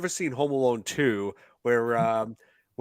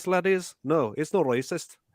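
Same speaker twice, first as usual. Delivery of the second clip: put-on, pitched-up Irish accent; 5 semitones higher than usual. Joking to the audience that the accent isn't racist: put-on Irish accent. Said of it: "me talking about like this".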